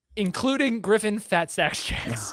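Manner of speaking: words broken up by laughing throughout. Naming a player by a funny nickname, laughing while talking. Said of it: "I can't say that without laughing".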